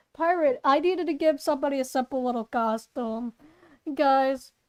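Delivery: ordinary delivery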